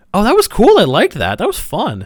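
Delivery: really excited, very cheery gushing, high swooping pitch. Retelling how they described a scary experience to cousins: imitating own excited cheery tone. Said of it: "really excited and, like, very cheery talking about it".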